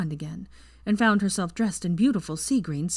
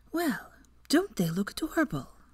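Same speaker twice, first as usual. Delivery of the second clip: sarcastic, hushed yet loud stage whisper, pitched up; 6 semitones higher, 3 dB quieter than usual. Someone standing over the pair in bed remarks on them, in a sarcastic loud whisper. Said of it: "said sarcastically in a hushed but still rather loud whisper".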